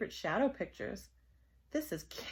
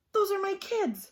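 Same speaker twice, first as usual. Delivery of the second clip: very high, rasping, scratchy voice; 11 semitones higher, 5 dB louder than usual. Reading a woman who spots her kids out of school, scratchy voice. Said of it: "she said in a scratchy voice".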